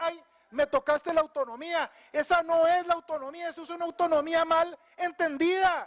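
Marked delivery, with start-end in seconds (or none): none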